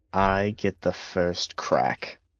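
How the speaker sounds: muttered under breath. A player staying in character, speaking under her breath. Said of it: "would just kind of under her breath".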